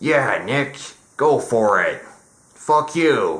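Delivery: slow, drawn-out, loose comic drawl. Imagining how a comedian would react to being mocked: George Carlin impression. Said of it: "I don't do a very good George Carlin impression".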